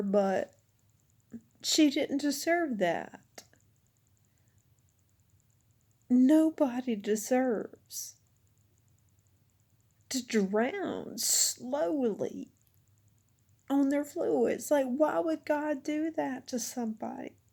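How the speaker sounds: crying, tearful speech throughout. Talking about their mother, crying while speaking. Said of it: "I'm sorry to cry about her".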